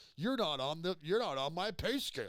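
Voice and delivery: angry yelling. Retelling how comics yell at people who poke fun: imitating a comic yelling. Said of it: "they'll start yelling at 'em".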